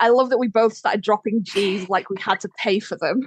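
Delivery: plain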